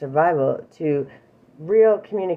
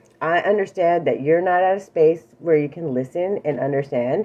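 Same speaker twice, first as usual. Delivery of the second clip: plain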